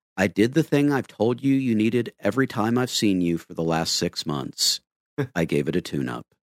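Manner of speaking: calm, low, serene, non-judgmental tone. Speaker retells what Walter said when asked what he did, imitating Walter's calm, serene voice. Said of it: "with the most calm, serene, no-judgment voice".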